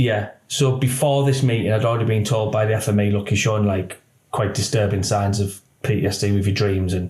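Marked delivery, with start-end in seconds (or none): none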